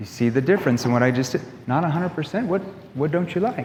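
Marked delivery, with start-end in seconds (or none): 1.7-3.6 baffled, confused, unsure puzzled tone. Demonstrating how tone changes a question, in a confused, puzzled tone. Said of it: "You're confused, that you don't understand".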